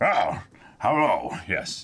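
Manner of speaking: deep, low, fishy alien commander voice. Imitating the show's Mon Calamari: Admiral Ackbar style voice. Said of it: "have the Admiral Ackbar style voice".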